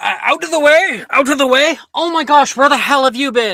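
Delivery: very high, very loud shouting. Narrator voicing older students yelling toward a man as he arrives, yelling. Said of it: "You can hear like the older years yelling".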